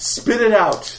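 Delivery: aggressive, in your face, slow and loud.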